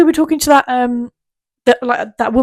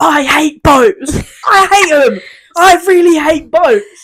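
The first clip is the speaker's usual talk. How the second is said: acted-out scream, much higher pitch, louder; 4 semitones higher, 5 dB louder than usual. The speaker recalls being drunk on a boat's top deck, retelling a scream. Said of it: "on the top deck and just screaming".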